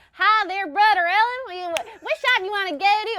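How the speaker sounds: put-on fully committed Southern accent, very loud and high. Retelling how they talked to each other in a mall: put-on southern accent. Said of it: "we committed to a southern accent".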